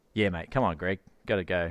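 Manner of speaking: natural Australian accent. After living overseas, the speaker shows how they naturally talk: natural Aussie accent. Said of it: "like the natural Aussie tongue".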